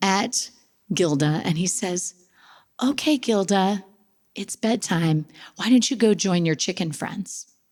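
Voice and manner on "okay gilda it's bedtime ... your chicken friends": put-on serene, calm voice. Speaker retells their son speaking to the turkey, Gandhi-like voice. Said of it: "in his Gandhi-like voice".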